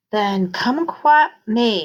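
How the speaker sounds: sing-song voice through laughter. Reading a story aloud, a brother jokes back: laughing sing-song voice. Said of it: "laughed in a sing-song voice".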